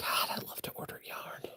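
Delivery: soft, hushed whisper, just under the breath. Speaker talking to viewers while planning a tutorial: whispering. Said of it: "You notice me whispering?".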